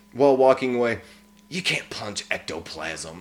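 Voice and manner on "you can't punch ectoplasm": soft, hushed half-whisper. Retelling a character's line said while walking away: imitating someone half-whispering. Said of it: "Kind of whispers to her".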